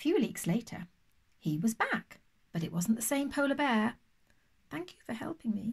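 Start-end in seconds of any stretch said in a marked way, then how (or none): 4.7-5.7 soft, quick, sheepish, embarrassed delivery. The polar bear, back after weeks away, speaks to the sea lion, sheepish. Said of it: "he said sheepishly".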